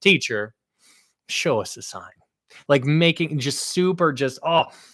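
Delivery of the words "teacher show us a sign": snide, mocking, sass-dripping sneer. Retelling the Pharisees asking Jesus for a sign: imitating a snide, sassy tone. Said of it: "the sass just dripping off".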